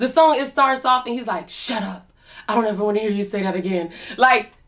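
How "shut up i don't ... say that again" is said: put-on low, quietly angry voice, quieter. Retelling how her man cussed her out: imitating Robert's low, unraised voice. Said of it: "low voice, never raised his voice".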